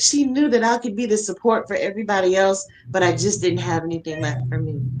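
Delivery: choked-up voice close to breaking into crying. Telling a listener about her, right after admitting they might cry; near tears. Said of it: "I feel like I'm about to cry".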